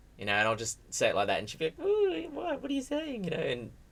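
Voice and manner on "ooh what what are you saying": put-on very high, girly, flustered woman's voice. Describing complimenting a woman, the speaker imitates her reply: imitating a woman getting girly. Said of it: "get all girly about it".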